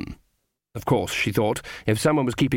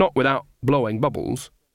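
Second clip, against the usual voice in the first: ordinary delivery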